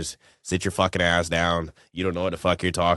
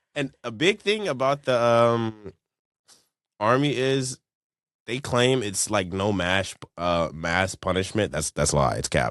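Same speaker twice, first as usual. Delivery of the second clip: normal talking voice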